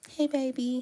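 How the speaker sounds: sugary sweet voice. Showing how they talk to their man sometimes: imitating own sweet talking voice. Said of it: "I'm real sweet when I talk to my, my man".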